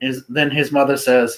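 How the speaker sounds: plain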